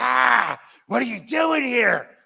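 very slow, rough, creaky growl, "ha" drawn out. Retelling how a girl on the phone greeted the speaker walking in, imitating a growl. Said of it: "she growls at me".

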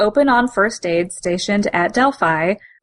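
normal talking voice

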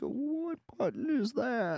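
put-on befuddled old person voice, high and slow. Speaker retells stringing along phone scammers, acting old and senile. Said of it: "I literally act old and senile".

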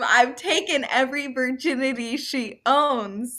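mock defiant shouting, "owns" drawn out. Retelling how her husband shouted back at a man teasing her, retelling a shout. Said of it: "Ryan shouts back at him".

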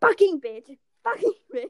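mock furious, loud, high-pitched cursing.

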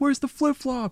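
imitated yell. Retelling what the team yelled during a game: imitating yelling. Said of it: "we're just yelling".

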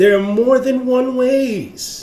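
preacher-like proclaiming. Speaker making a point to a listener, sounding like a preacher: preacher-like delivery. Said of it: "I really just sounded like a preacher".

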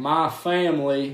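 put-on southern drawl. Imitating a coach speaking at a basketball game: imitating Brian Kelly's fake Southern drawl. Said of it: "he was like".

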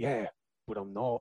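low, slow action-film character voice. Acting out two movie characters meeting: Crank character voice. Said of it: "He's gonna go".

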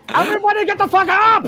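very loud, very high shout. Playing a character in a tabletop game, waking everybody up by yelling loudly. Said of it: "I yell Loudly".

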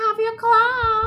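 high, loud, drawn-out scream.

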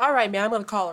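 mock loud-talking man's voice. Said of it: "He's talking so loud".

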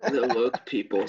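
timid, hesitant, under-confident, unsure delivery. Mimicking the other speaker's answer to demand more confidence, mocking an unsure delivery. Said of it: "I'm going to need you to be more confident in your answers".

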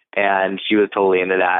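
ordinary talk, nothing marked

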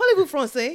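bold, self-assured, confident French, very loud. Retelling another speaker's French greeting: imitating a confident French greeting. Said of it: "Like, with such confidence".

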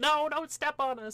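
very high, loud shrieking scream. Brainstorming a druid character who talks to plants, imitating screaming plants. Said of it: "perpetually screaming".

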